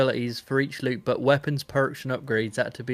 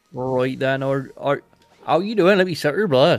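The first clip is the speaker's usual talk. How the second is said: loud, bantering, put-on West Country vampire accent; 6 dB louder than usual. Playing a vampire while joking about the game Vampire, put-on West Country accent. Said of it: "my West Country accent".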